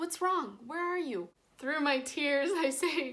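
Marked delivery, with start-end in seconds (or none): 0.0-1.3 put-on frantic, panicked, fast-paced delivery. Retelling dad answering the phone to crying: imitating a panicked dad. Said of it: "he starts freaking out".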